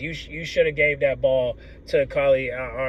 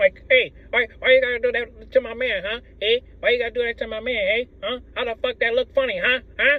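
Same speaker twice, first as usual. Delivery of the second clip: clumsy put-on Italian accent, pitched up; 9 semitones higher than usual. Acting out a woman's imagined reaction about her man, bad Italian accent. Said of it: "I can't do it right".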